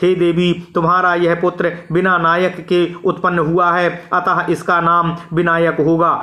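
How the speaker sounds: plain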